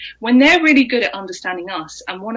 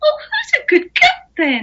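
put-on very high, cooing, sing-song baby talk. Showing how people talk to their dog: dog-directed baby talk. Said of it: "most people think of it as baby talk".

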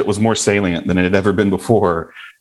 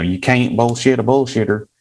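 natural Southern American accent; 3 semitones higher than usual. Quoting a saying always heard growing up in the south: southern accent. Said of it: "That's my Southern accent".

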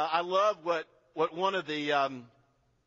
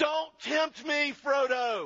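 loud, booming, slow, drawn-out wizard voice; 10 semitones higher than usual. Retelling the scene where Frodo offers the wizard the ring: loud Gandalf voice. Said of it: "Gandalf says in a loud voice".

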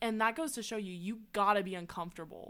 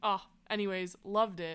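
normal talking voice

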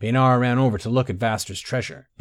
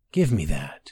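whispered, strange, barely recognizable voice, lower and slower; 6 semitones lower than usual. Walking toward Vaster, Tay whispers in a voice he barely recognizes as his own. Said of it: "he whispered in a voice he could barely recognize as his own".

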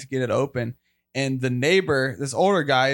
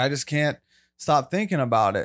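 put-on tearful voice, starting to cry. Retelling a father's words as he opened up: imitating someone starting to cry. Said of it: "starting to cry".

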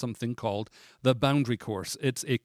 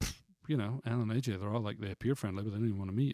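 soft, low, sulky grumbling. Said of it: "went away in a funk".

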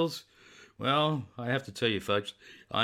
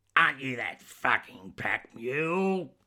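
husky, raspy low contralto, "mule" drawn out; 2 semitones higher than usual. A very tall woman challenges the nervous narrator, raspy contralto. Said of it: "in her raspy contralto".

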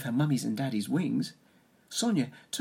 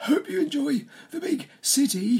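very high, loud, wheezy voice; 12 semitones higher, 5 dB louder than usual. Narrator reads a character's farewell as the seagull family flies off: wheezing. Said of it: "Percy wheezed".

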